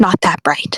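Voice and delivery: hoarse, rough, rasping whisper. Speaker voices a character placing a hand on a filament; hoarse whisper. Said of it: "whispers under her breath, uh, very hoarsely".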